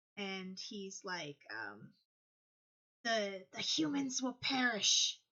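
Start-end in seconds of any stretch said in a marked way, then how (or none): 3.0-5.2 hissing, menacing creature voice. A game master voices a foe threatening the humans, in a hissing voice. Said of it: "he hisses again".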